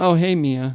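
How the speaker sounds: dead, flat, emotionless, affectless delivery. Retelling how the game character greets his missing wife: imitating an emotionally dead reply. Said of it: "emotionally dead".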